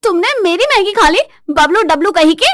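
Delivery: angry, shrill, loud yelling outburst. Acting a wife whose husband ate her noodles: yelling. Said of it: "क्यों चिल्ला रही हो?".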